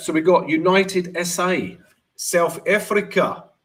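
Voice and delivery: slow, high put-on South African accent. Reading out countries between Bitcoin and gold talk, in a South African accent. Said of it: "That's my South African accent".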